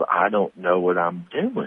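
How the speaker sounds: put-on Southern belle accent. Telling a story about a woman at a gas pump, quoting her in a Southern belle voice. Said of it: "you did the voice of a Southern Belle".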